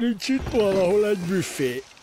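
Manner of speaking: sleepy, drowsy, half-awake voice. Narrator reading a hungry character's question in a story, sleepy voice. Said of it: "Kérdezte Zödön álmos hangon".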